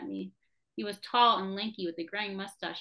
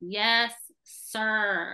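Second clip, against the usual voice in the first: contemptuous, scornful, louder; 5 dB louder than usual. Narrator answers a demanding captain in front of the staff, with contempt. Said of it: "I loaded my words with contempt".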